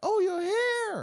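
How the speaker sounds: very high, very loud exclaiming yell. Speaker retells a team member's reaction, retelling a loud exclamation. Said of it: "She exclaimed".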